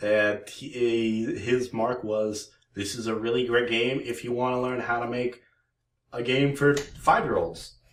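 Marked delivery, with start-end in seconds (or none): none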